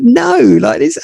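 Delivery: stunned disbelief, blurted out high and baffled.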